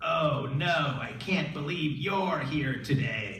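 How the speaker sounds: very loud, creepy delivery. Waddling toward a woman, the speaker retells what he said, in a creepy voice. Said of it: "in this kind of creepy voice".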